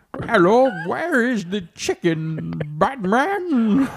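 put-on, muffled villain voice. Asked if wearing a grocery mask made them sound like Bane, doing a Bane voice. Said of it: "Did you sound like Bane?".

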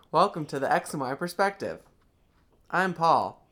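mechanical, machine-like, robotic-sounding delivery. Opening the podcast alongside a co-host, the host gives a mechanical delivery. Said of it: "Sounds very mechanical".

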